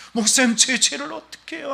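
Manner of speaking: high, tearful, sobbing, crying voice. Retelling an elderly person's tearful plea to the pastor: imitating someone crying. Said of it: "하면서 막 울어".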